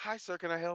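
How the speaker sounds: put-on fancy voice. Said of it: "She had the fancy voice on".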